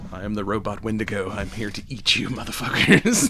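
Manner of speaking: sweetly narrating delivery. Joking about a robot villain, doing an Anthony Hopkins voice. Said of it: "with that, you know, sweet Anthony Hopkins voice".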